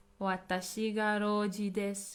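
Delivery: ordinary delivery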